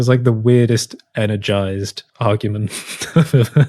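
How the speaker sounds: words spoken through laughter.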